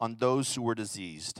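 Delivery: ordinary delivery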